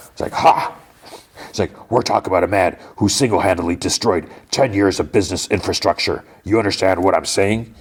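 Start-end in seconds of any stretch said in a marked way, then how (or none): 1.5-7.7 mock contemptuous scoffing. Acting out a man talking to another man: mock-scoffing. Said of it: "And he like scoffs".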